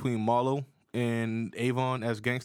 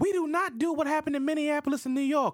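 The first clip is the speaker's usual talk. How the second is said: very high, squeaky mock cop voice. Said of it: "when he said".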